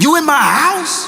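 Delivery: very high-pitched, menacing, threatening voice. Retelling a phone confrontation about a break-in: imitating a threatening bass voice. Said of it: "Bass in voice, ready to beat somebody down".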